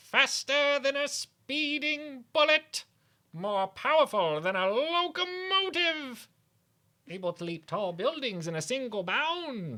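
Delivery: put-on, very high, evil cartoon villain voice. Asked to do his Skeletor voice holding a Superman toy: Skeletor voice. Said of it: "Can [name] do his Skeletor voice".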